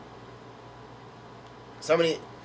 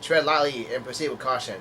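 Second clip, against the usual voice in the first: ordinary delivery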